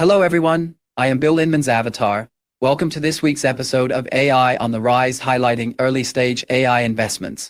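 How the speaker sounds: British English accent. Demoing the UK version of an AI avatar introducing a show episode, in a British accent. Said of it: "the U K version of Bill Inman".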